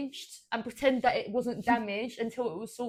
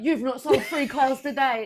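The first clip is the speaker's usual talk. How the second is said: mock, loud, screaming boss voice; 2 semitones higher, 5 dB louder than usual. Retelling being pulled into the office: imitating a boss screaming. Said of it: "I got pulled in the office and screamed at".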